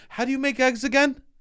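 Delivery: speech with an odd, distinctive lilt. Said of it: "you just inflected them different".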